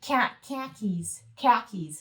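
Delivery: put-on Chicago-style pronunciation. Demonstrating regional accents, the speaker says the words in a Chicago accent. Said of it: "Chicago is is um khakis".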